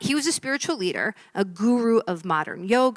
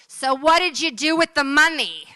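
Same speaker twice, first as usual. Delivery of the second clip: mock loud, high shouting; 6 semitones higher, 5 dB louder than usual. Telling a joke, voicing someone at the back of the congregation: shouting out from the back. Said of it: "a voice shouts out".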